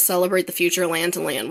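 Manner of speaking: normal talking voice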